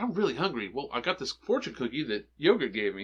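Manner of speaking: ordinary talk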